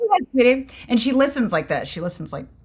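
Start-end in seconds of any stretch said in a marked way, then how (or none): 0.0-0.7 put-on dismissive, older diner waitress voice. Retelling how a toddler talks, like an older waitress at a diner: imitating daughter as older diner waitress. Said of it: "like you're, like, an older waitress at a diner".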